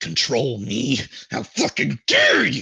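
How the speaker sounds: scornful, loud, rising, furious dragon voice. Voicing a weeping dragon cursing and belittling the Avatar: dragon cursing and belittling. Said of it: "cursing, and otherwise belittling the Avatar".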